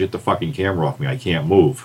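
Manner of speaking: muttering, low mumbled delivery. Retelling an injured wrestler on the mat muttering to the ref: retelling a muttered line. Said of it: "he muttered to the ref".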